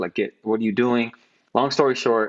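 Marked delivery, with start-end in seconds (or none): none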